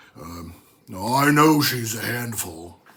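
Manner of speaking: low, gruff, gravelly growl with authority. Narrator reads a man answering about a woman who manipulates him, low, gruff, gravelly voice. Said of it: "He lowers his voice until it's gruff and gravelly".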